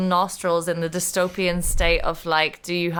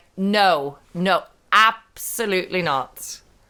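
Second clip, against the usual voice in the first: very slow, commanding, authoritative teacher voice. Showing on request the authority voice used with pupils: authoritative teacher voice. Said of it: "Can you do it now?".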